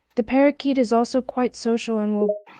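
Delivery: plain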